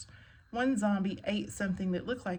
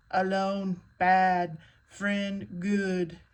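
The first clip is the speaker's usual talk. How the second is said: loud, slow, booming monster voice; 5 dB louder than usual. Frank grabs Judy's arm and speaks to her in a Frankenstein voice. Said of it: "he said in a Frankenstein voice".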